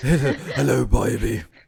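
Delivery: put-on speaking in an Australian accent. Quoting Kano, whose accent you love and find so funny, in Kano's Australian accent. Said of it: "Kano's Australian accent".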